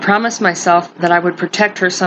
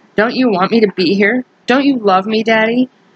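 put-on little girl voice, sulky, pleading whine; 3 semitones higher than usual. A little girl sticks her lip out and answers her daddy, whining. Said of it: "she whined".

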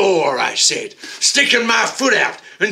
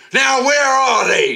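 threatening, menacing, pitched-up voice; 5 semitones higher than usual. The narrator, waving a reefer in a man's face, demanding menacingly. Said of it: "I demanded menacingly".

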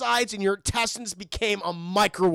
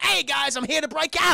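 put-on Australian accent, pitched up high; 6 semitones higher than usual. Retelling a story, voicing Dingo arriving at the cell: Dingo's Australian accent. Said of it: "he's fucking all Australian shit".

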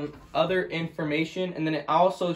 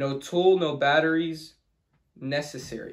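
normal talking voice

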